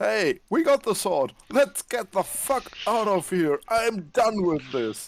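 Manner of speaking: high, shouted character voice. Passing the others while escaping with the sword: yelling in character. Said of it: "I'm just yelling".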